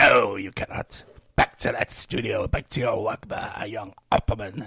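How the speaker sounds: put-on stern older man voice. Speaker acting out a bit where a headmaster answers him, imitating the headmaster. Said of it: "And he says".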